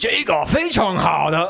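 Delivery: very slow, deliberate, high wizard voice in Chinese. Performing the wizard's line after being asked for an accent: best accent as the wizard. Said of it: "do your best accent".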